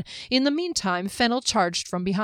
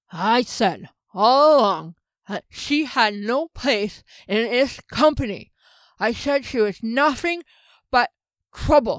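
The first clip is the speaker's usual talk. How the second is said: slow, effortful speech through a stiff jaw; 3 semitones higher, 4 dB louder than usual. A character just coming out of a freezing spell forces out words: stiff-jawed, effortful speech. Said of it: "where [name] was just coming out of the spell that had frozen him in place. He flexed his hands and feet, and though he could move his jaw, it was stiff and the lips and tongue were not quite ready".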